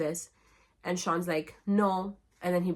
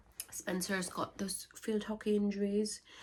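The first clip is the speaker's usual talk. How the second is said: soft, put-on British accent; 2 semitones higher, 6 dB quieter than usual. Recapping a story about Spencer's field hockey injuries: British accent. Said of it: "I don't know why I'm speaking a British accent".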